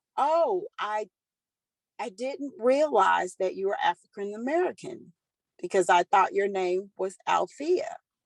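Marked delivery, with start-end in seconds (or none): none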